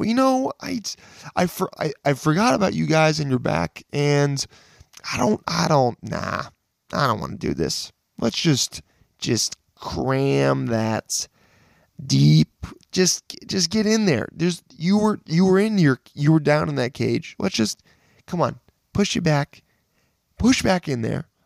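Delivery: high, strained, pleading voice.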